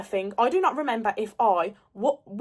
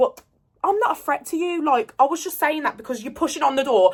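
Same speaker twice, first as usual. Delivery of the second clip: ordinary delivery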